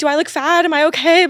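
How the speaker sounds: put-on neurotic nervousness. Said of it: "performing being nervous".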